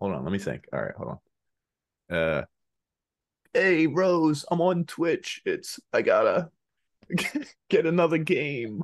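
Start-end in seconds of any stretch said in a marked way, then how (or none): 3.5-8.8 put-on high, slow old man voice.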